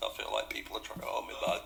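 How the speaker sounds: low, creaky, whispered eerie double voice.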